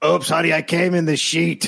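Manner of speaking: hoarse, rasping voice, pitched a bit high. Joining in imitating Earl: raspy voice imitating Earl. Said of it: "he's got that raspy voice".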